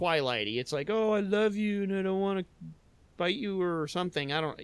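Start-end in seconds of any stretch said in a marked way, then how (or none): 0.9-4.3 mocking, mushy, lovesick romantic-hero voice. Mocking a movie's romantic dialogue: mocking impression of The Howling. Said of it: "that was my impression of Howling".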